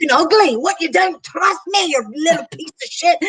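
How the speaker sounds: furious Irish accent. Imagining an addiction as a distinct voice in one's head; angry irish accent. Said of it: "angry Irishman".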